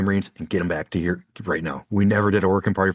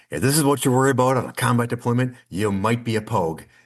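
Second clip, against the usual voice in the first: mock announcement, mild, projected for all to hear; 4 semitones higher than usual. Retelling Hodges pointing at a sign in front of workers, in Hodges' loud voice. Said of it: "in his loud voice goes".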